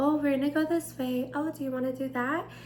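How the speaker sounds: put-on high teacher voice in childlike register. Showing how they talk with little kids at work: high voice for little kids. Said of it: "I often have to talk like this".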